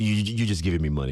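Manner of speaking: horrible, clumsily done put-on Croatian accent. Retelling what Toni Kukoc would say over bets after practice, in a horrible Toni Kukoc Croatian accent. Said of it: "You know that Croatian accent".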